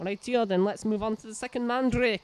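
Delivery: sudden Scottish accent. Moving on to the next part of the game: scottish accent. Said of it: "talking in a Scottish accent there".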